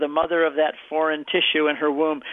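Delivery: ordinary talk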